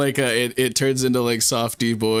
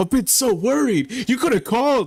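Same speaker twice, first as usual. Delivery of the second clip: very high, panicky, frantic fretting; 12 semitones higher than usual. Retelling a scene, the speaker voices him greeting her, mock freaking out. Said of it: "he's just like freaking out".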